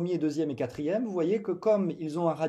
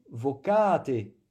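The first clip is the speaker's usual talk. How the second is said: vocate with stress on second syllable ca; 3 dB louder than usual. Latin lesson on plural imperatives: stress on ca in vocate. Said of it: "je marque l'accent sur la voyelle au pluriel".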